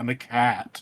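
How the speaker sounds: put-on talking cat character voice. Recalling a cat character from ad reads: Sam Riegel cat voice. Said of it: "that's the voice I imagine".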